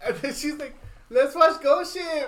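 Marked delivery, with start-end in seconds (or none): 1.1-2.3 put-on Mexican-accented speech. Quoting what she said about watching a film, mexican accent. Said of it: "you made a real Mexican accent right now".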